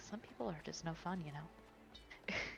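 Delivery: very soft, quiet sideways whisper. Voicing a character who comments to a companion: whispering in character. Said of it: "she kinda whispers to Tenzi".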